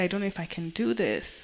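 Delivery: ordinary delivery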